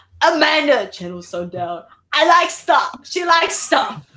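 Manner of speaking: slow movie-trailer narrator announcement voice. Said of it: "He goes".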